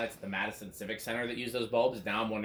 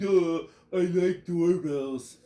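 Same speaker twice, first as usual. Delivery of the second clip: put-on voice sounding as dumb as possible; 6 semitones higher, 6 dB louder than usual. Make Jonas as dumb as possible, saying the only thing he can say, in a dumb Jonas voice. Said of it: "make Jonas as dumb as possible".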